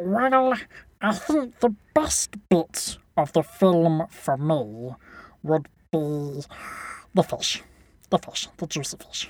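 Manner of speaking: put-on creature voice. Asked in the studio about his favourite bit of the film, answering in Gollum voice. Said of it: "Gollum voice".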